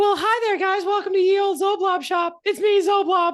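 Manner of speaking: very high, loud, squeaky cartoon mouse voice. Voicing the shopkeeper zoblob greeting the group: copyrighted mouse voice. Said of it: "copyright mouse".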